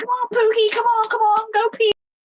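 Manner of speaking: shrill, very high, coaxing yell. Retelling how a neighbour called her dogs outside: imitating a lady yelling.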